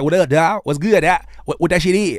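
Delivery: California-style slang delivery. Showing how rappers would sound switching to California talk: imitating California-style talk. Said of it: "And go to Cali and be like".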